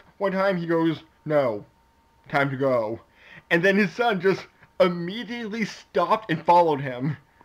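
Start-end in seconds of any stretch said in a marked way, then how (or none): 1.3-3.0 mock dry, flat, unfussed deadpan, low and slow. Retelling how a father stopped his son's mischief, retelling a deadpan remark. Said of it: "all deadpan".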